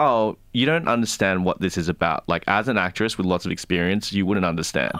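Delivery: ordinary delivery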